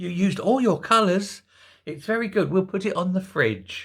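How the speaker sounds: mock, talking-down voice used for small toddlers. Mocking how she spoke to her husband, the President: imitating Jill Biden's toddler talk. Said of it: "Like he was a three-year-old".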